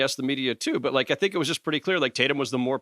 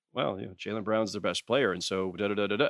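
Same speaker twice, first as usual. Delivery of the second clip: mock deadpan, low, matter-of-fact delivery; 5 semitones lower, 5 dB quieter than usual. Retelling an answer to an open-ended question about Jaylen Brown, mock matter-of-fact. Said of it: "it was very matter of fact".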